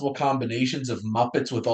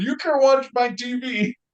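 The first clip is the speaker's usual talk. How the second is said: sudden, very high, shrill yelled outburst; 11 semitones higher, 4 dB louder than usual. Describing a scene, the speaker has Kermit yell at the stepdad: Kermit yelling. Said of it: "Kermit just yells at him".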